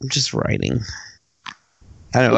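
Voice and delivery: whispered, gloomy, dejected, breathy half-whisper. Answering a question about upcoming projects, sounding depressed. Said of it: "I sound really depressed".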